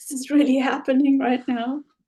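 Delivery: acted hushed whisper. Telling the story of a card trick, recalling a whisper to another person: retelling a whisper. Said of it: "I whispered to Amber".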